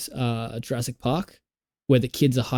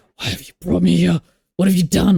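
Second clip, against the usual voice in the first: whispering, pitched higher; 5 semitones higher, 3 dB louder than usual. Retelling a friend's reaction during a scary film: imitating someone whispering. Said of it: "whispering to me".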